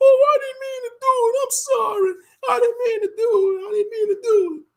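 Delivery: loud, very high, sobbing whimper, acted out. Predicting how a woman will act when facing accountability, imitating someone crying. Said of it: "she's going to start crying".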